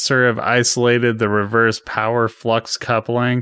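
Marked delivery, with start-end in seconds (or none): none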